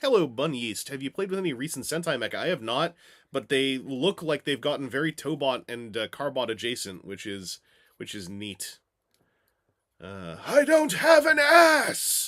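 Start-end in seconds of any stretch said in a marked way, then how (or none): 10.4-12.3 bad shrill impersonation, drawn out, pitched up, slow, loud. Redoing a past voice role as Transtech Shockwave: bad Shockwave impersonation. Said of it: "not a very good impersonation of a Shockwave".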